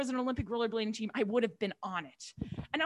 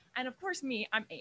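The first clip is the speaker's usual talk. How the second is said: ordinary delivery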